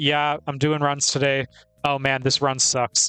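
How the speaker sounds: mock casual, undramatic delivery. Imitating speedrun streamers on stream: imitating an undramatic, casual tone. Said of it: "they're never that dramatic about it".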